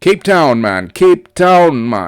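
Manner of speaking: loud, playful put-on Jamaican accent. Reading out a south african company's location, in a jamaican accent. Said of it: "I'm thinking like Jamaica".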